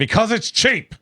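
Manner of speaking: mock very high, shrill yell. Retelling how a man answered a young assistant: imitating someone yelling. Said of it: "yelling at her".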